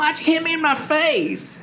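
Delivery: very high, squeaky voice. Retelling a funny scene where Finn gets hit, in a squeaky Finn voice. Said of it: "Finn's all squeaky voice".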